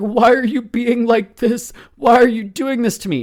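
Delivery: put-on weepy, self-pitying voice. Describing a mother playing the victim, imitating mom's fake crying. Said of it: "she's got these fake tears".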